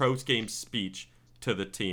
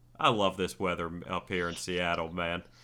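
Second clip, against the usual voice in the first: put-on sarcastic tone, lower pitch; 4 semitones lower than usual. Retelling Gruden's remark on stormy Seattle weather: sarcastic Jon Gruden imitation. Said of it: "obviously being sarcastic".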